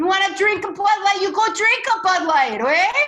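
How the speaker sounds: put-on Wisconsin accent, very loud and high. Speaking to an audience, doing a Wisconsin accent. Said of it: "that's my best Wisconsin accent".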